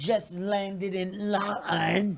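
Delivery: put-on drawled out slowly in a British accent. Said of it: "Can you do your best British accent".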